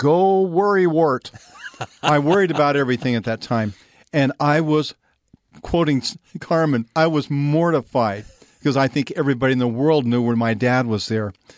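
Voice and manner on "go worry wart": mock, very loud shout, like cheering. Recalling a dad calling out at a track event, retelling a very loud shout. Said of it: "with this very loud voice that everybody in the stadium could hear".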